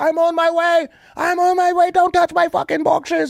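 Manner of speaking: very high-pitched, furious, angry yelling. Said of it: "He's like talking to me like this".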